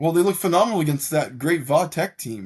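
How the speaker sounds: sarcastic. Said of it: "I'm being sarcastic".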